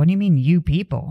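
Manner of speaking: ordinary talk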